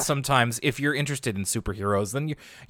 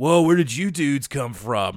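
mock, always-surprised stoner dude voice. Describing a character's distinct voice, doing his always-surprised stoner voice. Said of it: "he has a very distinct voice, just like he kind of is always surprised".

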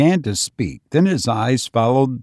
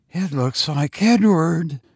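high, frantic, frenzied burst of fear; 5 semitones higher than usual. Rebecca bursts out after Caroline speaks: in a frenzy of fear. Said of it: "burst out Rebecca in a sort of frenzy of fear".

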